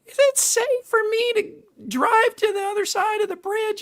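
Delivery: very high, sweet, cartoonish voice. Retelling a woman in a car interrupting an interview with a question, cartoon voice. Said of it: "She has a cartoon voice".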